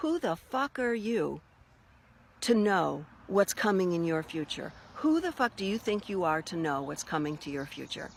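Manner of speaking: acted, stern and harsh scolding. Retelling a finger-wagging rebuke about the future: imitating a scolding. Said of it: "wagging his finger and says".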